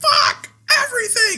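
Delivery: mock very high, very loud, shrill angry outburst. Retelling own outbursts of anger over random things: imitating an angry outburst. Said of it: "just 'cause I'm mad at some random shit".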